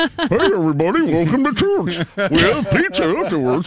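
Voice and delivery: mock impression voice. Mimicking a relaxed church welcoming everybody: mocking imitation. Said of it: "You're mocking now".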